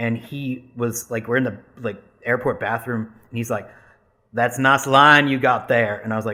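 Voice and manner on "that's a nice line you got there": loud, heavy Southern drawl. Retelling what a guy in an airport bathroom said, in a heavy Southern drawl. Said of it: "just like really deep Southern drawl".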